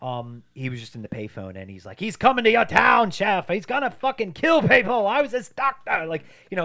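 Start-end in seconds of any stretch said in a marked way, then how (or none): 2.0-6.0 put-on screaming, higher and louder. Retelling a movie scene where the doctor warns on a payphone: imitating Donald Pleasence screaming. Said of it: "he's screaming".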